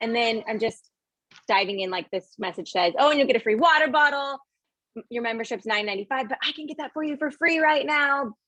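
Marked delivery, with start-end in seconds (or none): 3.0-8.3 excited, eager, upbeat voice, pitched much higher. Demonstrating how to offer a free deal to a VIP customer; excited sales pitch. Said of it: "excited, excited, excited".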